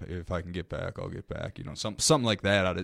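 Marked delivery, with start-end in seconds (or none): 0.1-1.6 put-on casual, nonchalant voice. Picturing the tone of his interview line: nonchalant Jay Cutler impression. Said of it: "that's standard nonchalant Jay Cutler stuff... I can just see the tone".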